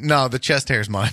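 mock deadpan, flat straight-faced delivery. Retelling how he answered without laughing, acting out a deadpan answer. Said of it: "he just deadpan answered it".

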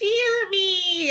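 tiny, squeaky little voice, very high. Describing a scene where everyone looks down at a tiny character: tiny squeaky voice. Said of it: "he's like squeaking like".

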